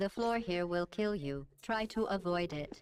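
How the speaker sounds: ordinary delivery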